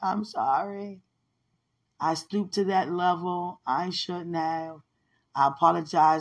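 slow, tearful, crying delivery. Retelling own apology to an old lady after crying: retelling a tearful apology. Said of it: "I started crying".

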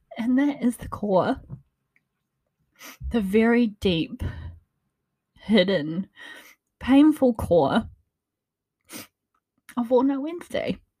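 tearful voice, crying while talking. Naming the painful core of Walnut Wednesday: crying while talking. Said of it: "I'm sorry, I keep crying".

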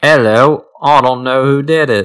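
slow, unsure, put-on British accent. Working through the accent for a detective role: put-on British accent. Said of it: "It was supposed to be a British accent".

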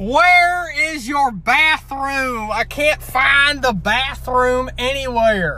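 put-on thick country accent, hollered loud and slow. Retelling yelling for a bathroom at people who don't speak english: hollered country accent. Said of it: "I get the most country accent voice and just holler at them".

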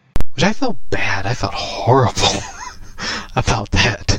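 speech laced with laughter. Recalling an embarrassing bookstore story, laughing while talking. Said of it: "I know I'm laughing".

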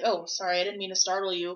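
plain

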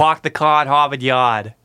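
put-on Boston accent delivery. Showing how the famous speaker sounds: John F. Kennedy voice. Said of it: "that's what John F. Kennedy sounds like".

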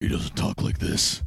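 put-on gruff superhero voice. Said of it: "his Batman voice".

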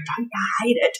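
hushed whisper, muffled behind hands. Retelling what practitioners say behind their hands: whispering behind hands.

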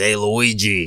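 cartoon character voice. Showing how Mario sounds on the Super Mario show, Super Mario Show Mario voice. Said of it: "He sounds like this".

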